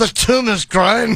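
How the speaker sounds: put-on Scottish accent. Imagining a Scottish oncologist giving a diagnosis, in a Scottish accent. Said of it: "I wouldn't want a Scottish oncologist".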